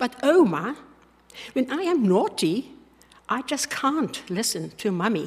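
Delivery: put-on slow delivery in an English accent. A grandmother retelling her granddaughter's reply, imitating Lucy's English accent. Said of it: "in her English accent said".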